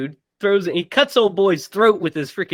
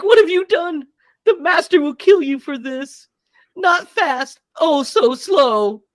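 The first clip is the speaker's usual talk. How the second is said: mock weeping, very high and drawn-out; 10 semitones higher than usual. Retelling a film scene where a character threatens: imitating a crying character. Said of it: "And he's, like, crying".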